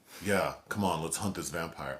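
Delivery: ordinary talk, nothing marked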